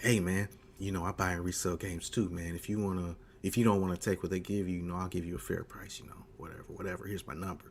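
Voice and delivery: soft, hushed half-whisper. Retelling what was said quietly to a seller at a shop: retelling a whisper. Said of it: "So I kinda whispered to him".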